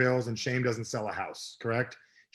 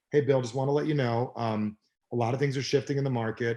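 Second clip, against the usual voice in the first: ordinary delivery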